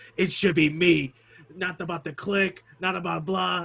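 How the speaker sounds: put-on wrestler promo voice, big and showy. Quoting a wrestling promo with Jim Ross: Triple H impression. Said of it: "really good impression of, uh, Triple H".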